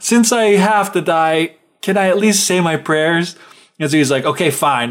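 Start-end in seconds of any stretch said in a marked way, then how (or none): 0.0-3.4 put-on crying, higher and slower. Retelling the Bluebeard tale, voicing the wife: imitating someone crying. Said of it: "she's just crying and crying".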